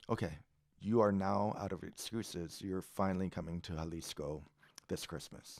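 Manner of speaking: put-on deadpan delivery. Retelling a phone call where Ruben answered good news: imitating Ruben's deadpan voice. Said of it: "I've never heard Ruben so deadpan".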